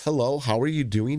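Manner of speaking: ordinary talk, nothing marked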